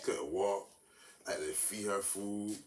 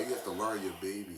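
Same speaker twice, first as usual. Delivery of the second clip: ordinary talk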